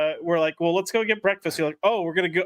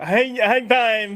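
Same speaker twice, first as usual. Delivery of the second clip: put-on high, dopey, dim-witted goofball voice; 5 semitones higher, 4 dB louder than usual. Suggesting a code signal to a friend, put-on mocking dim-witted voice.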